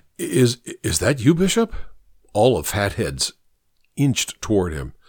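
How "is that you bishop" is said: stuttering, halting, higher voice. A caller on the phone asks the man who answered if he is the bishop, stammering. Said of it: "Goodwin stammered".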